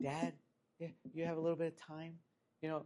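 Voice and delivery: very quiet, tiny, hushed mouse voice. Retelling knocking on an intimidating dad's door as a kid, in a little mouse voice. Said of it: "you talk in like a little mouse voice".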